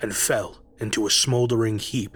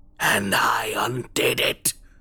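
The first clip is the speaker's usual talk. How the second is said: growling, beastly creature voice. Narrator reads a living corpse's reply to Charles: growling creature. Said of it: "the creature growled".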